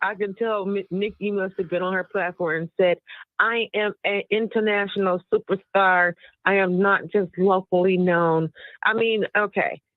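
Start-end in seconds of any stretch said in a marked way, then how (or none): none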